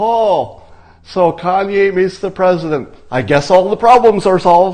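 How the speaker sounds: dripping, mocking, loud, high-pitched sarcasm. Acting out how critics without logic talk, in a mock-sarcastic tone. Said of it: "they might have sarcasm, and it goes like this".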